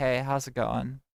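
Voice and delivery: flat, uninterested voice. Showing how they sound when not streaming: bored. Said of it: "if I'm bored and I'm just like".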